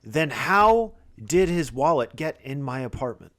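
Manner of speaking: sniffling, tearful, authoritative and commanding tone. Narrator voices a woman questioning the players: tearful, commanding voice. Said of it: "in a very commanding voice says".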